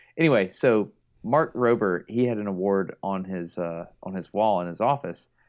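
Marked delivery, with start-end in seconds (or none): none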